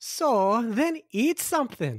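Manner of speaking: put-on slow, high-pitched Scottish nanny accent. Asked to do the Doubtfire, mom answers someone saying they're hungry: Mrs. Doubtfire voice. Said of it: "That's a perfect accent".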